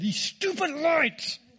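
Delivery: high, spitting, spluttering little angry rant. Retelling a complaint about traffic lights: imitating a spitting angry outburst. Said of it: "Spit all over myself".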